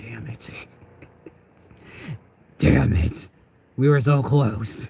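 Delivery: imitated muttering under the breath. Retelling the father's reaction under his breath: imitating muttering under breath. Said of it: "underneath his breath".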